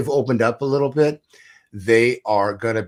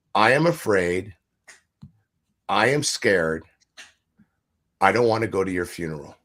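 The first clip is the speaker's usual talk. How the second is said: sincere, genuine, open, heartfelt delivery; 3 semitones lower than usual. Showing how to share fear for someone's life: heartfelt, from the heart. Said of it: "share with them from your heart".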